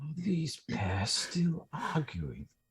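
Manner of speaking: soft, slow, half-muttered under-the-breath grumble. Speaking in character about the arguing pair: muttering under breath but audible. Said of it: "loud enough for everybody to hear, but still under my breath".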